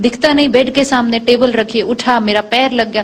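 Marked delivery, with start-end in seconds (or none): none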